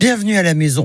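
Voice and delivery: speaking with a full mouth. Host welcoming listeners on the morning show: talking with mouth full. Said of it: "j'ai la bouche pleine".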